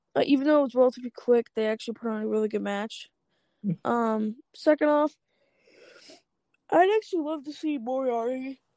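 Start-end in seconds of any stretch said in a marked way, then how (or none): 3.9-8.6 slow words stretched out by a yawn. Reviewing a match just watched: yawning while talking. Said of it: "Sorry, I'm yawning".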